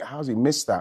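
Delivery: ordinary delivery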